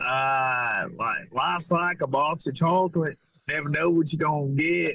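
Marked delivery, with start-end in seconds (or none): 1.0-4.9 put-on high-pitched country Southern accent. Asked by the other speaker to talk as Forrest Gump, doing a Forrest Gump impression. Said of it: "What would the country accent sound like".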